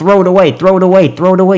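high-pitched, urging, pleading voice. Retelling watching the game on tv, imitating screaming at the tv. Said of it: "I'm there screaming at the T V".

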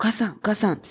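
hushed voice. Retelling calling to mother quietly inside an ambulance: whispering. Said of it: "小声で".

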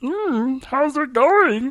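very high voice, stretched out very slowly. Asked to bring out the Marvin voice: Marvin voice. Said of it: "Can we speak to Marvin?".

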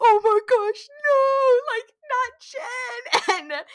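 very high, loud crying wail. Retelling a friend's story about a woman losing it, imitating her crying. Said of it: "She's crying".

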